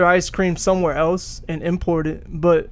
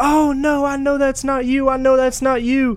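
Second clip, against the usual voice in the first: play-acted high-pitched shrieking scream; 7 semitones higher, 3 dB louder than usual. Telling a CVS story, the speaker imitates the cashier who starts screaming. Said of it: "I hear the cashier just start screaming like".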